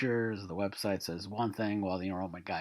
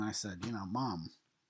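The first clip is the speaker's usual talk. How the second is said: ordinary delivery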